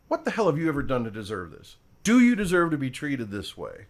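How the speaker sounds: drill sergeant voice with swooping pitch. Voicing the voice heard in one's head all day, drill sergeant voice. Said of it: "this drill sergeant voice in my head going".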